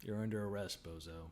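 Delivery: very low, quiet, hushed deadpan. Co-host redoes the line after the other speaker's try, doing Chuck dead-faced. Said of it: "it has to be way more like dead faced".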